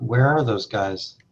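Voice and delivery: put-on grumpy voice. Teasing late arrivals about someone waiting for them: imitating Matt being grumpy. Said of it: "Matt was getting a little grumpy".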